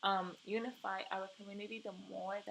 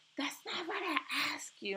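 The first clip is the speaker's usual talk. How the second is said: nasty, snippy, pitched-up tone; 7 semitones higher, 4 dB louder than usual. Retelling what a colleague snapped in a meeting: imitating a nasty attitude. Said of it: "gave me a really nasty attitude".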